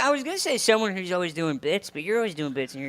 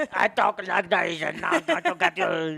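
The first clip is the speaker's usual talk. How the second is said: put-on robotic voice with Austrian accent. Imitating how Schwarzenegger talked as a robot: Schwarzenegger impression. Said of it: "he's like".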